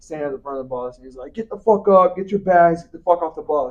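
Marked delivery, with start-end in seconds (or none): 1.3-3.7 put-on rough, bossy, aggressive, commanding voice. Retelling a man at the front of the bus: imitating an aggressive order. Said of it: "kind of aggressively".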